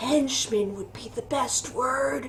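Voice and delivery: very quiet, confidential half-whisper. Voicing a character who leans forward toward the players: half-whispering. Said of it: "leans forward and whispers".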